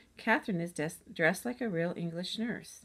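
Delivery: plain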